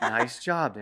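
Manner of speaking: calm, gentle, soft and soothing settling tone. Showing how to praise a calming dog: soothing praise. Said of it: "more of a soothing praise".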